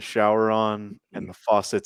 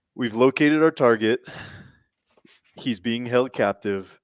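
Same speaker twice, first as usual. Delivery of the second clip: usual speaking voice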